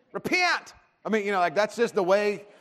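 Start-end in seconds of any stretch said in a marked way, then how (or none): 0.1-0.7 very high Southern American accent on repent. Showing how people mock Christians, mocking Southern accent on repent. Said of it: "you will use a southern accent and you will say the word repent".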